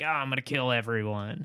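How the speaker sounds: mock, hammy, camped-up villain menace. Describing a game's tone, imitating a line from it: campy voice. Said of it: "It is completely campy and just like".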